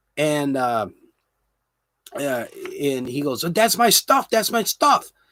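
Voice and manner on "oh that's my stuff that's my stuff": mock-angry man voice, much higher. Retelling a man who got mad at him for filming, imitating an angry man. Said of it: "started getting mad at me".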